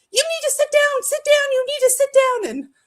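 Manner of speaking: very high shrill yelling. Retelling how nurses reacted when the speaker collapsed: imitating nurses yelling. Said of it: "they're yelling at me".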